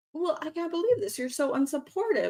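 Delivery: fast, soft, high-pitched, angry, upset and reproachful tone. Parent retelling a family argument with a son: retelling an angry outburst. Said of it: "I like just got like angry and emotional".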